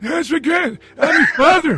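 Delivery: put-on elderly grandpa voice, very high and loud. Joking about a baby calling someone grandpa, acting it out in an old voice. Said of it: "I got to do the old voice".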